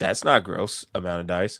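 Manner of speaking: deadpan, dry, sarcastic tone. Reacting to a player reaching ten dice in a roll: sarcastic. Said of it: "I say sarcastically".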